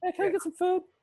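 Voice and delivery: high-pitched cat voice. Showing how they voice their cats: high-pitched voice for a cat. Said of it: "I go high pitch for all of them".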